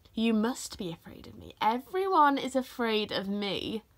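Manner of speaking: smug, pleased-with-itself, self-satisfied bragging. Narrator reading a character's reply to the boy who says he's not afraid: smug. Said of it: "said Shere Khan smugly".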